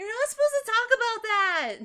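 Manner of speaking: put-on very high, very loud, scared little-child voice. Voicing a scared child in a game: kid voice. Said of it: "that was a really good kid voice".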